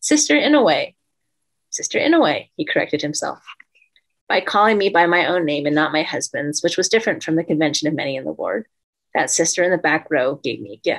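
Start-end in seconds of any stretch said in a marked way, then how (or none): 0.0-1.0 glad, happy, very high-pitched voice. Retelling her answer to the teacher's question, recalling saying it happily. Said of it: "I said happily".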